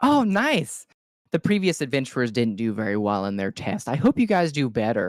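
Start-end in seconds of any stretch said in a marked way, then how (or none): 1.3-5.1 put-on childlike dwarf character voice. The narrator, voicing a dwarf child, speaks to the adventuring party in a dwarf child voice. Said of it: "He is a dwarf child".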